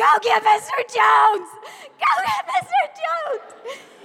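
acted, very high-pitched, repeated shouted scream. Retelling a classroom fight, calling for help: retelling own scream. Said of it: "and I was screaming".

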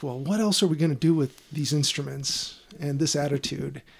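ordinary talk

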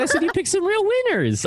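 upward inflection toward winners. Speaker repeats to John how they actually said it, with upward inflection. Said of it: "I said it upward inflection".

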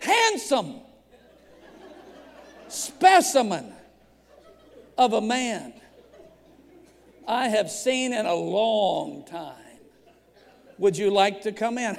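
slow, stretched-out, laughing, flirty voice.

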